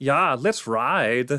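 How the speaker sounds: put-on speaking with a German accent. Speaker performs the catchphrase of his made-up character Hans, in Hans voice. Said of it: "that's Hans's voice there".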